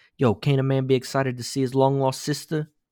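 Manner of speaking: odd put-on New York tough-guy accent with twang. Recapping a sitcom-like show, quote the sister's brother in a weird new york accent. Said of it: "really weird New York accent saying".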